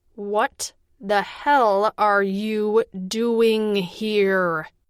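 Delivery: slow, measured, each word deliberate. A woman repeats her question to the narrator, slow and deliberate. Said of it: "slowly and deliberately this time".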